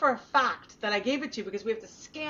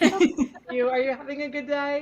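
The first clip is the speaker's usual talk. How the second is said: put-on extra-sweet voice, louder; 3 semitones higher, 5 dB louder than usual. Retelling walking into the pharmacy: imitating own super nice voice. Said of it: "with my super nice self".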